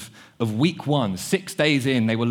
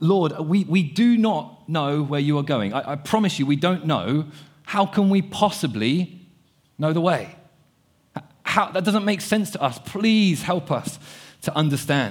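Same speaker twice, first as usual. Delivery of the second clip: mock pleading, desperate, frustrated, pitched up; 4 semitones higher than usual. Acting out Thomas's question to Jesus: imitating a frustrated, desperate plea. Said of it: "you can hear the frustration and the desperation in his voice".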